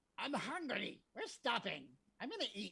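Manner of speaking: ragged, haggard, nasty humanoid creature voice. Narrating to players, voice something tromping through the swamp in a haggard, nasty humanoid voice. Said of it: "you hear this haggard, nasty humanoid voice going".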